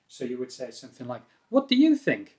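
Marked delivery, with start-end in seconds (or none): 1.5-2.2 question-like tune rising, climbing into "think". Demonstrating how to ask an interested question, with rising questioning intonation. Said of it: "raise the intonation as you as you ask the question".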